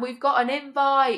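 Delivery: acted-out, mild, half-shouted delivery. Retelling a phone call with good news: imitating someone shouting. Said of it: "And he was shouting".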